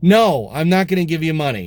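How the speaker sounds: courteous yet firm tone. Recounting refusing a man on the subway who asked for money: retelling a nice, firm voice. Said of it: "And I did it in a nice, firm voice".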